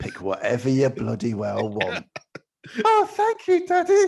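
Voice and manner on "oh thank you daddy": put-on very high, loud small-child voice. Acting out the other speaker's childhood thanks to his dad, imitating a little kid. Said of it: "That's me to use a kid".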